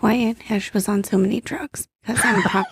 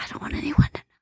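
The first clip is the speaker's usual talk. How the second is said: imitated whisper, quieter. Retelling checking in for a drug test: imitating own whisper. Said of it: "whisper it".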